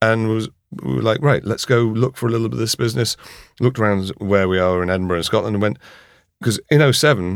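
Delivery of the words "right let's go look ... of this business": ordinary talk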